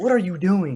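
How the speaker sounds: play-acted alarmed, bewildered, freaked-out tone. Retelling the teacher reacting to the barking: imitating a freaked-out teacher. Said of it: "freaked out I was barking".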